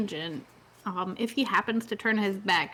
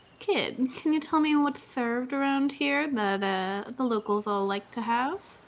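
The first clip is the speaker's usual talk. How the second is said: soothing, gentle, coaxing voice; 3 semitones higher than usual. In a voice-acting demo, a woman at the counter speaks to a kid: soothing voice. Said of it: "in a uh, soothing voice, she's gonna say".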